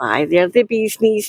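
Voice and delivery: ordinary talk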